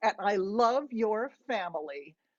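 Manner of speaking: ordinary delivery, nothing marked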